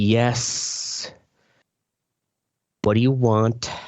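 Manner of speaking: quiet, seething anger. Showing how to answer someone in a passive-aggressive way, seething. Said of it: "add a little extra seething to your voice".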